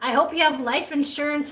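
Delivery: ordinary delivery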